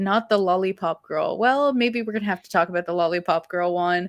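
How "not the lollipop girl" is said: plain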